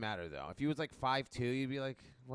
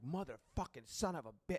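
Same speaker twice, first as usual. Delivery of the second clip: put-on, mild, fed-up frustrated outburst; 4 semitones higher than usual. Retelling a meltdown alone in the car: imitating own past yelling. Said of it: "and I'm, like, yelling".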